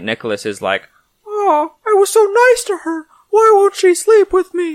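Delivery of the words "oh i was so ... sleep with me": loud, very high squeaky voice. Telling a Krampus story, speaker voices St. Nicholas: St. Nicholas in Mickey Mouse voice. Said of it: "Why does he sound like Mickey Mouse?".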